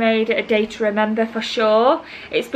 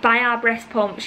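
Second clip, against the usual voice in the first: ordinary talk, nothing marked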